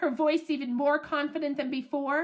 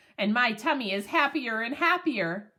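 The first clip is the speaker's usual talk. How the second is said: ordinary delivery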